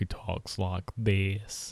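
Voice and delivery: put-on slow Southern voice. Giving the character a new voice as a joke: Forrest Gump voice. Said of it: "Finn's a Forrest Gump".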